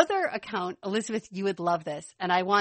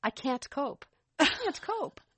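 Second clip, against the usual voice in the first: put-on tiny British accent of a two-year-old; 6 semitones higher, 4 dB quieter than usual. Host quotes what a two-year-old girl says when excited: little British accent. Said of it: "she says in her little British accent".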